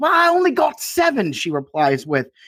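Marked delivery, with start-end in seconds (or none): 0.0-1.3 put-on thick British accent, pitched very high. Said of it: "it was a really thick British accent".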